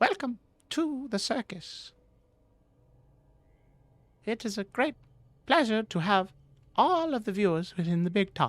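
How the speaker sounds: very high voice in short choppy bursts. As game master, voicing a character greeting the player, very high, short and choppy. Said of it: "he says in a very high voice, very short and choppy".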